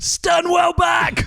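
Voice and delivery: high, loud, drawn-out yell.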